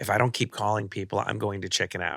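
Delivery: ordinary talk, nothing marked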